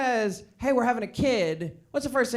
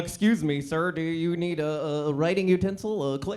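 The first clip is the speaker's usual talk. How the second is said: put-on male impression voice, spoken slower; 4 semitones lower than usual.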